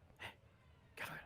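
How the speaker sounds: whispered voice. Skidding to a stop at a door, the character greets someone, whispering. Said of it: "why I'm whispering".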